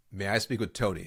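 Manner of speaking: short, firm, downward-falling close on a name. Asking a gatekeeper for the decision maker by name: firm downward inflection. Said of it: "my tone is a downward inflecting tone. It's very firm".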